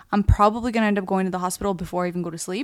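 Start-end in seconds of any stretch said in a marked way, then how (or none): none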